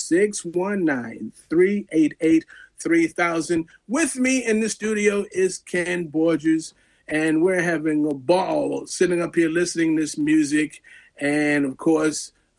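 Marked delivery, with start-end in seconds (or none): 0.0-3.7 slow, careful, deliberate delivery. Radio host repeats the station's phone number for listeners: said slowly. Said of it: "I'll say that again slow".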